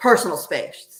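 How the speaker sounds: gruff, dead-level, flat delivery. Retelling what an Ovilus device said to her, in a gruff voice. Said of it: "pretty gruffly".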